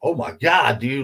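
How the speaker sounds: high, drawn-out, stunned, astonished cry. Retelling watching a case video at two in the morning: retelling own yell. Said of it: "I'm, like, yelling".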